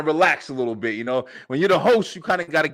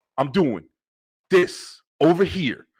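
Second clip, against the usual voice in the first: play-acted slow, blunt, direct, straight-to-the-point delivery. Imitating how they used to talk on early episodes: imitating own old direct way of talking. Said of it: "I used to talk like this".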